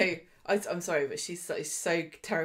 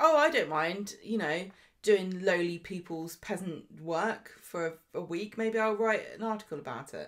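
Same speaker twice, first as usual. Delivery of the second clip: plain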